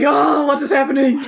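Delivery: pushy, aggressive father voice. Retelling a voice done earlier for a father: imitating an aggressive father voice. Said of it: "a very aggressive father".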